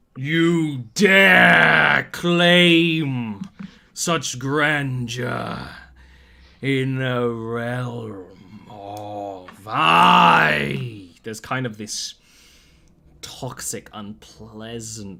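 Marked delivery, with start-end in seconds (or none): 0.2-11.1 menacing booming monster voice, very loud and very slow. Storyteller describing a scene, voicing the figure who speaks: booming voice. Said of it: "as he booms out these words".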